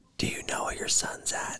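very quiet, hushed whisper. Retelling a 12:30 a.m. phone call, speaker repeats the unknown caller: whispering caller. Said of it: "they whisper".

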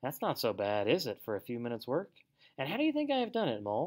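plain

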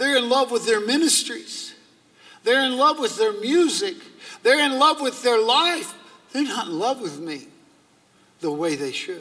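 put-on high, cracking, frustrated voice. Retelling what Jesus said to him, imitating a broken voice. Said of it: "he had a brokenness in his voice".

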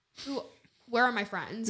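ordinary talk, nothing marked

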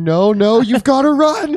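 put-on shout. Voicing a character who joins the ghosts' warning: yelling in character. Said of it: "Sebastian also starts yelling".

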